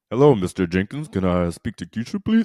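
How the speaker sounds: put-on deep grown-up voice. Acting out calling a girl's house and asking her father for her: put-on deeper voice. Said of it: "you went deeper".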